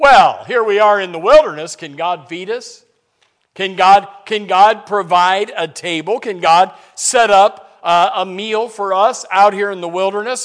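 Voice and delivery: put-on, very loud, scornful, taunting mocking jeer. Retelling the people's complaint in the wilderness, the speaker imitates their mocking tone. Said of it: "and so they mockingly".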